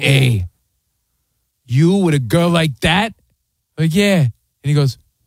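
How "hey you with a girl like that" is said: put-on Italian mobster voice, slower. Retelling a man who pinched his cheek, in a mob-movie italian guy voice. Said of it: "Like something out of a mob movie".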